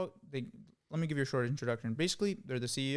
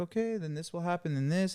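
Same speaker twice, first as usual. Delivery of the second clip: very gentle, soothing, guiding reassurance; 4 semitones higher than usual. Acting out how they first talk to you, imitating a really gentle voice. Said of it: "they talk to you in this really gentle voice".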